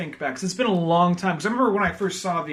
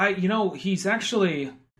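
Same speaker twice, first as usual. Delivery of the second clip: ordinary talk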